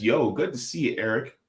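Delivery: plain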